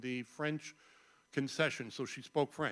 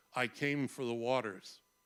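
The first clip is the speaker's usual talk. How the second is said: put-on deadpan delivery, slower. Quoting an unforgettable film line, a character answering an inspector, imitating a deadpan reply. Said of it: "turns around deadpan and says".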